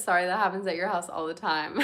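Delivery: ordinary talk, nothing marked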